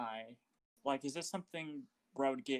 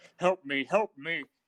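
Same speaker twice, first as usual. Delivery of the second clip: loud, panicked, freaking-out yelling; 3 semitones higher, 7 dB louder than usual. A player's character calls for help in a game scene, freaking out. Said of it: "I start like freaking out".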